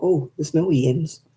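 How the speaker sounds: usual speaking voice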